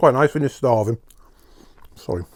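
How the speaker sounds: talking with mouth full, chewing while speaking. Eating cheesecake while waiting for friends, talking with mouth full. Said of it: "I shouldn't talk with my mouth full".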